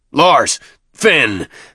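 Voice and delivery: loud, high, roaring bellowing shout. Reading a story, a character bellows for two constables: bellowing. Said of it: "Thune bellowed".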